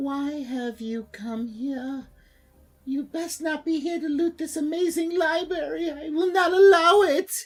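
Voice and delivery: echoing high apparition voice. Game narrator voices an apparition confronting the party in a library: hollow, high-pitched ghost voice. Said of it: "Her hollow yet high pitched voice echoes".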